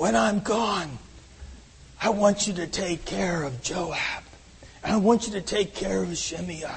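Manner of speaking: hushed, really bad put-on mob-boss voice. Voice David's words to Solomon for when he is gone, as a really bad Godfather impression. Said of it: "really bad impression of the Godfather".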